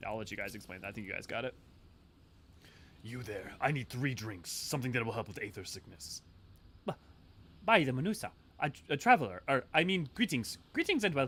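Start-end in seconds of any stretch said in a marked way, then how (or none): 7.6-11.3 unpracticed, raised, put-on Indian accent. Voicing a character who greets a traveler: first-try Indian accent. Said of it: "I don't think I've actually ever tried to do an Indian accent".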